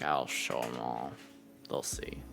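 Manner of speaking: very low, very soft muttering to himself. Voicing a character muttering to himself while shoveling muck: muttering to himself.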